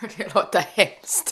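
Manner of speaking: speaking through laughter, with a laugh. Describing severe ovary pain, laughing while speaking. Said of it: "Ursäkta att jag skrattar".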